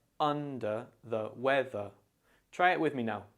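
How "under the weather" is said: under the weather, stress on un and weath. Teaching an idiom's word stress, stress on un and weath. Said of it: "make sure to put the emphasis on un and wev".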